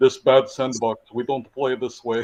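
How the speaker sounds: mock Russian accent. Imitating Putin right after describing how he sounds: Putin in a stereotypical Russian accent. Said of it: "U S stereotype of a Russian trying to speak English".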